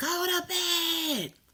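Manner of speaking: mock high top-of-the-lungs holler, bed drawn out. Retelling how a mother hollered at her kids: imitating someone hollering loudly. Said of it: "she hollered to the top of her lungs".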